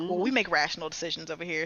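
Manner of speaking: put-on cocky, nervy tone. Retelling how an executive answered a question: imitating someone's nervy remark. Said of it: "just the way he said it".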